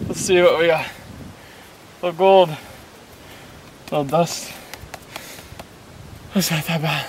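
breathless, panting, out of breath. After sprinting in the heat at Deadvlei, checking what they got, out of breath. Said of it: "I'm out of breath".

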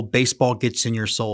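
ordinary talk

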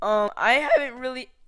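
voice cracking and breaking. Addressing the guys before a Brawl Stars round, voice cracking. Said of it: "Another voice crack".

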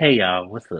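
very deep, low, man-like voice. Greeting everyone at the start of the session; sounding like a man. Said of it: "You sound like a man".

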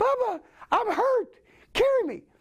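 very high-pitched helium-like squeak. Retelling being hurt and in shock: Pee Wee Herman on helium voice. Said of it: "suddenly I sound like Pee Wee Herman on Helium".

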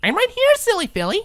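very high, chirpy voice. A narrator reads Pinkie speaking from behind Twilight, chirping. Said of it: "Pinkie chirped".

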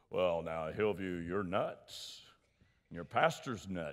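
put-on Rochester, New York accent. Recalling what a man once said on this stage, doing Leonard's big Rochester voice. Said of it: "he likes to talk in that big Rochester, New York voice".

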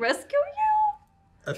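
echoed with a questioning rise on rescue you. Repeating another player's line back: imitating a questioning tone. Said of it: "I like the question in your voice".

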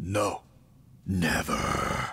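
threatening, sinister, scary, menacing voice. A character refuses someone asking to have some too: scary voice. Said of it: "that voice is scary".

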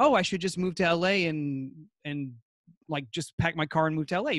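ordinary talk

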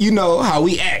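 ordinary talk, nothing marked

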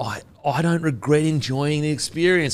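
put-on solemn delivery.

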